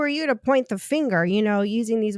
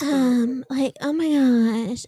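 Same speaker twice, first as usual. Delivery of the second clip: put-on young teenage girl voice, about fourteen; 3 semitones higher than usual. Mimicking a woman said to sound like a fourteen-year-old: imitating a fourteen-year-old voice. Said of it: "She sounds like a fourteen-year-old when she's talking".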